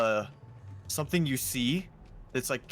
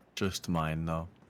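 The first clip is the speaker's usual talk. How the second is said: sad, much lower; 7 semitones lower, 3 dB quieter than usual. Chatting about a game with a friend, answering in a sad voice. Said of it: "why'd you sound so sad that time".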